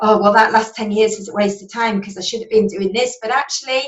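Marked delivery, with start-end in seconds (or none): none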